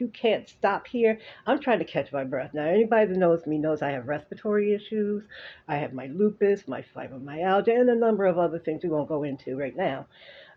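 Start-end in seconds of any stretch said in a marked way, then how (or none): 0.0-1.2 mild yell, pitched up. Retelling what a bus driver yelled at them: imitating a driver yelling. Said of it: "He was yelling at us".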